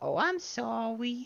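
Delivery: put-on very high, tiny baby voice. Putting on Tammy from Parks and Rec for a bit: Tammy baby voice. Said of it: "do the baby voice to Jeremy Jam and just be like".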